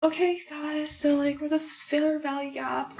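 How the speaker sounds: put-on high voice. Showing what speaking in a higher voice would sound like, higher-pitched voice. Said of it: "speak in a higher voice, like for two hours? Pick me voice".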